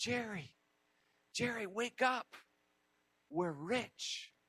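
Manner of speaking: urgent, frantic, hushed half-whisper. Telling a joke about hunters surrounded by wolves: hushed, frantic half-whisper. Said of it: "in a hushed and frantic tone, he whispered".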